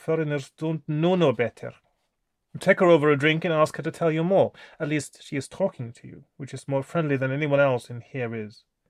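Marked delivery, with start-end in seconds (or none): 0.0-1.7 put-on accent from Transylvania. Reading a gamebook aloud, voicing an old woman: full Transylvanian accent. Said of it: "I'm gonna try with the full Transylvanian accent".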